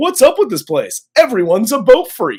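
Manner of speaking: loud stand-up rant delivery. Retelling a character's complaint about everyone sailing: Seinfeld impression. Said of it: "He turns into Seinfeld here".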